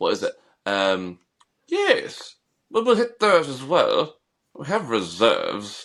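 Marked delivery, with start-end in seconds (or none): 1.7-5.9 slimy villainous English king voice, slow and swooping. Quoting the english king from a film: slimy english king voice. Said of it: "a beautiful voice that you just love to hate".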